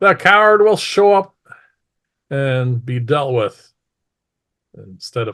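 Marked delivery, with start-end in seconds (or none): 0.0-3.7 loud, carrying, proclaiming voice. Narrating a scene for the other player, voicing the woman: loud voice. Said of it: "she says this in a loud voice".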